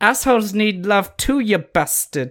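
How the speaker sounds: very high-pitched, cartoonish British accent. Describing a character's high-pitched limey voice, the speaker does a South Park British accent. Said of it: "that was from um south park that accent".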